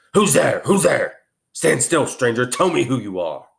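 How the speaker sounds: growling beast voice. A huge creature rises to challenge a stranger stepping over it: growling voice. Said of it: "said in a growling voice".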